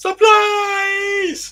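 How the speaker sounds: very high, shrill yell, words stretched long. Retelling how the little guy jumps out by the shed: imitating how they say 'supplies'. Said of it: "they say supplies like that".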